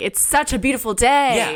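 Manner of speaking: mock charismatic cult-leader tone, high. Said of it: "in kind of a brainwashing type way".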